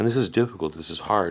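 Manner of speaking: plain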